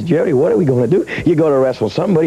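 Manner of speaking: ordinary delivery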